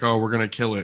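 plain

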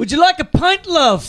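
put-on English accent in a very high voice. Trying an English accent on the spot while the others stand by. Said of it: "I'm about to try and do an English accent".

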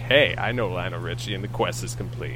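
ordinary talk

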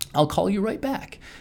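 very sweet, high-pitched. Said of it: "she very sweetly said".

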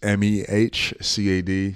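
slow, careful, letter-by-letter spelling. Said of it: "Get it right".

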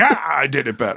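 put-on grumpy old man voice, yelling, wide-ranging pitch.

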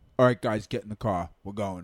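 low, put-on Brooklyn accent. Retelling a cousin showing up the day after their dad died, in a brooklyn accent. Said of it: "I don't know why I just did a Brooklyn accent".

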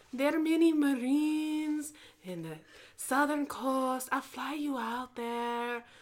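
put-on elderly grandmother voice. Acting out a talk between a grandma and her grandchild, impression of a grandma. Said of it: "An impression of your grandma".

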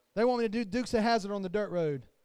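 plain

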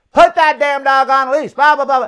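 woman's angry ranting yell. Retelling a stranger's complaint in the park, imitating a woman shouting. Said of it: "She continues to shout at us".

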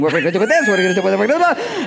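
high-pitched, rushed, frantic and flustered. Recalling absorbing another person's panic, acting out past panic. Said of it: "just started panicking".

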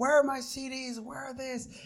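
angry shouting, pitched high. Retelling how the headliner yelled at them: imitating someone yelling. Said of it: "he yells at me".

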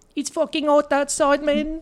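put-on voice, very high pitch, kept flat and level. Joking about a Chappie voice for Siri, answering about weather: Chappie voice. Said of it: "a Chappie voice for, like, Siri".

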